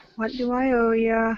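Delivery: close, intimate whisper. Playing a character, a player whispers a question in another character's ear. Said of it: "just kind of whisper in his ear".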